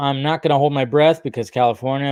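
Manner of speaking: ordinary talk, nothing marked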